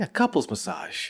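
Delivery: hushed, breathy, whispered mumble under the breath. Retelling a gift-giver's reply to thanks: imitating a quiet mutter. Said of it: "real quiet, P J mutters".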